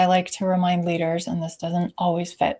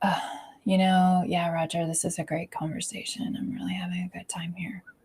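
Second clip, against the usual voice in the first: dripping sarcasm, heavy with boredom; 6 dB quieter than usual. Showing how sitting sounds, telling Roger it's a great conversation: sarcastic and bored. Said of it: "you can hear that dripping sense of sarcasm and boredom".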